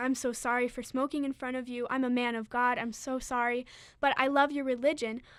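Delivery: ordinary talk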